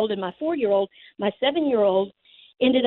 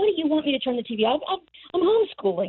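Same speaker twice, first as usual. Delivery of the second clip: put-on high, light yell, kept small; 5 semitones higher than usual. Retelling answering her husband's phone call, imitating her own yelling. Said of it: "yelling at him".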